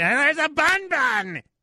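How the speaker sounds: very high, slow, stretched comic voice. Showing how a silly line has to be said, Gilbert Gottfried voice. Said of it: "You have to sound like Gilbert Gottfried when you say it".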